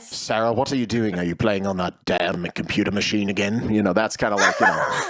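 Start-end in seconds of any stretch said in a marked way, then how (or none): 0.2-3.7 fake, put-on British accent. Joking with others about accents: fake british accent. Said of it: "My fake British accent just set her off".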